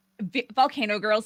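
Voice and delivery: ordinary talk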